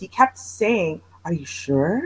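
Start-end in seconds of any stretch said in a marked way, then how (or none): 1.2-2.1 weird, low, soft creepy voice. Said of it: "In that weird, creepy voice".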